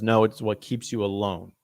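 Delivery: ordinary delivery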